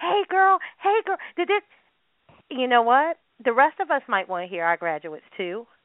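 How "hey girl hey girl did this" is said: mock very high, shrill yelling. Retelling what people at a graduation yelled: imitating people yelling a name. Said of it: "they were just yelling the person's name".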